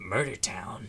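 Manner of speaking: gruff, gravelly soldier voice. Joining the group repeating a place name, in Solid Snake voice. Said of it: "In Solid Snake voice".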